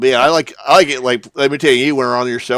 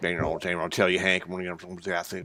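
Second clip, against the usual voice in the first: put-on mumbling, much lower and quieter; 6 semitones lower, 14 dB quieter than usual. Speaker describes how an acquaintance talks, doing a mumbled Boomhauer impression. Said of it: "he kind of mumbles or something".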